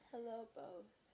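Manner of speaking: sick, unwell, under-the-weather voice. Greeting the viewers from a distance while feeling ill: sounding sick. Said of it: "you sound so terrible".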